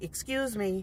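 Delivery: sweet, nice, courteous, polite tone. Retelling asking people at a garage sale to move: imitating own nice tone. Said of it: "in a nice tone".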